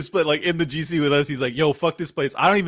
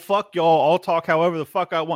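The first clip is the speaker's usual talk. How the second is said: ordinary talk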